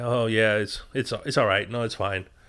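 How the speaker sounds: mock disappointed, let-down tone. Retelling a scene where a woman answers her partner: imitating someone disappointed. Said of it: "And she's disappointed".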